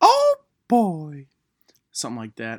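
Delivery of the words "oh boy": squeaked out, high-pitched and loud. Giving a teaser of the impression they're known for, Mickey Mouse voice. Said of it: "I'm known for my Mickey Mouse one".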